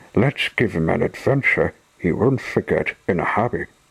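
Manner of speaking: plain reading voice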